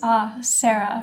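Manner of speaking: put-on London accent, said in a lovely way. Retelling a book signing where the author reads the speaker's name, Zadie's London accent. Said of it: "in her like lovely London accent".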